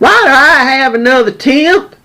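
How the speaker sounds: put-on angry, high yell in a Texas Southern accent. Retelling a supervisor's first-day outburst: imitating a screaming Texas Southern accent. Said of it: "she screams at the top of her lungs in her Texas Southern accent".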